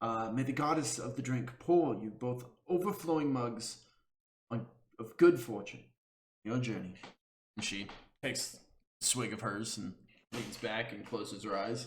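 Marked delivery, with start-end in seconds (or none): 0.3-6.9 soft, close half-whisper under the breath. Voicing a character who toasts the listener's journey: half-whispering. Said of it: "you hear her kind of whisper to you".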